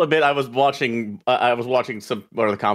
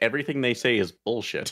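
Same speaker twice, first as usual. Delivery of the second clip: ordinary talk, nothing marked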